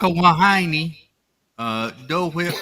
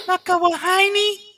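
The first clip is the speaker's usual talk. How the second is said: animated duck-style cartoon voice; 5 dB louder than usual. Asked to say the drink's name again, answering in a Daisy Duck voice. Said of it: "can you say that in Daisy Duck voice?".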